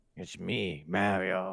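low, gravelly, ground-down voice. Imagining a photorealistic game version of the character, the speaker tries a gravelly Mario voice. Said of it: "he's got to go with the gravelly voice".

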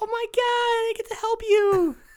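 very high, drawn-out, giddy delight. Retelling a scene where Mister Fran makes a breakthrough: giddy Mister Fran impression. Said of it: "and he gets all giddy".

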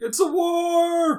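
very high, screechy dinosaur-like shriek. Opening the Comm Talk show, raptor-like voice. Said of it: "You sounded like a raptor".

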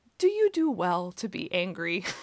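put-on serene, unruffled, very calm, gently swooping voice. Retelling the story, the speaker voices the Lord's reply, retelling a very calm reply. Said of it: "the Lord very calmly says back".

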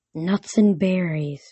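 dreamy, soft-toned delivery. Told by a girl that he's nuts, the satyr answers dreamily. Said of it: "Grover said dreamily".

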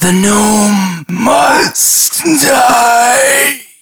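high, very slow ethereal voice, "die" stretched out. Game master voicing a voice heard through the hallway after the weasel falls: ethereal voice. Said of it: "this ethereal voice spread through the hallway that goes".

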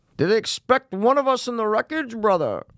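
put-on very high villain voice with Scottish accent. Trading bits with another person who praises the impression, use a Bane voice mixed with Sean Connery. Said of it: "It's a mix of Sean Connery and Bane".

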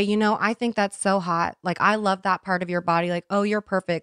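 ordinary talk, nothing marked

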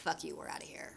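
soft, whispered, dismissive. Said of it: "basically Jack is like".

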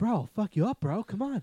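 high, loud aggressive bro voice. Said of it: "that's a pretty good impression".

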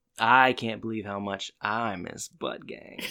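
mock, playfully suggestive tone. Repeating the other speaker's line right back: mock suggestive tone. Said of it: "You said that so suggestively".

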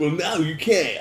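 commercial voiceover announcer voice. Describing an ad scene to co-hosts, the speaker voices the announcer: commercial announcer voice. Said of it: "the announcer's like".

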